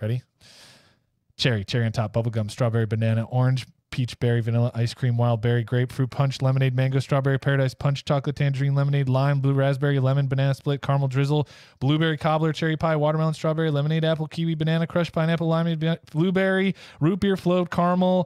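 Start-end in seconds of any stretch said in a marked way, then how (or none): 1.4-18.3 long list read straight through, no commentary. Reading a long list of flavors aloud: reading really super fast. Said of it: "I'm just gonna read 'em really super fast".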